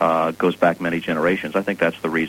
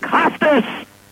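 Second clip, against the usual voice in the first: very high, piercing scream at full volume. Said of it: "he screams at the top of his lungs".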